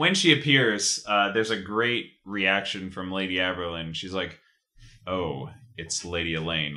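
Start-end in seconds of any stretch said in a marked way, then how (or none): 5.1-6.7 mock reluctant, grudging, unwelcoming tone. Retelling how Lady Aberlin greets Lady Elaine: grudging "Hello, Newman" greeting. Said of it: "Like a very, "Hello, Newman."".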